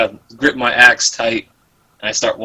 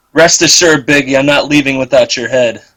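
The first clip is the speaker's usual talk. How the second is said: loud yell with echo; 3 semitones higher, 4 dB louder than usual. Yelling in character so the words echo up a cavern: yelling. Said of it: "I wanna yell so that it echoes".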